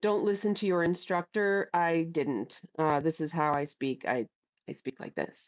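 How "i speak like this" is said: soft, unprojected, near-whispered, close speaking voice. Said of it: "I don't have to project".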